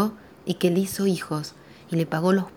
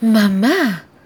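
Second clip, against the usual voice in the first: very loud, high, drawn-out mortified shout; 5 semitones higher, 9 dB louder than usual. Narrator voicing the lady of the house calling to her mother, shouting, mortified. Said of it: "Gritó mortificada la dueña de la casa".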